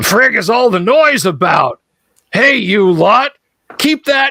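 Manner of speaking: high, growling creature voice. A game master voices a gnoll character, in a growling gnoll voice. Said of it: "he growls in gnollish".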